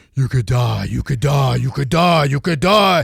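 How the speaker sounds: really loud, booming, rough voice, not one's own. Speaker retells the voice in their head while looking down over a rail: really loud voice. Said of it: "it was in really loud voice, it's not even my own voice".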